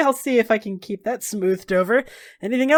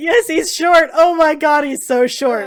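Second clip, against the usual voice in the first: put-on speech, high and loud, broken by laughter; 5 semitones higher, 5 dB louder than usual. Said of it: "Kasana laughs for twenty minutes".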